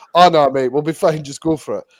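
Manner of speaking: ordinary talk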